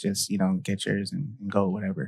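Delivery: whispering. Retelling what the speaker told the daughter early in the morning, whispering. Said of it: "I'm whispering".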